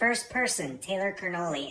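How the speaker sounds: usual speaking voice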